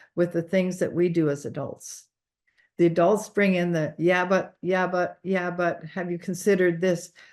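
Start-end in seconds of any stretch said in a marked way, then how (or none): none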